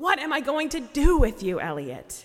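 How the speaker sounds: silly, sarcastic, exasperated, loud, high mock scolding tone.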